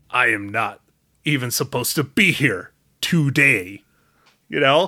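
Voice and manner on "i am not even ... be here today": grave, dramatic action-hero delivery, low and slow. Imagining how he would say a line: mock-serious action-movie delivery. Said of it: "It would probably be like something all serious and actiony".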